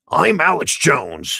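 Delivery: belted out, high in pitch and loud. Doing an impression of Alex Jones: Alex Jones impression. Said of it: "I guess I have to be loud".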